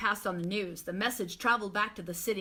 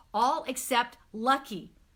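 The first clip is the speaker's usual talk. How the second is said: ordinary delivery, nothing marked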